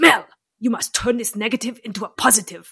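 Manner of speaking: put-on heavy German accent with broken English. Retelling what a rowing head coach always said: imitating German coach's accent.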